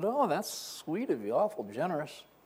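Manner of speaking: soft, swooping, faintly sarcastic tone. Recalling answering a man's offer while sensing a punchline coming, retelling a slightly sarcastic reply. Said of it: "responding with a little tinge of sarcasm".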